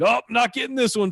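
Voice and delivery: mock sudden, all-out, high, loud scream. Retelling a fly ball hit over a player's head: imitating Mookie Betts screaming. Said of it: "he just screamed".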